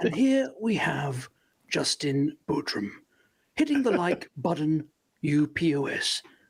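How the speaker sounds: nature documentary narrator voice. Asked by a friend to read it out, Attenborough impression. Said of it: "you need to do that Attenborough thing".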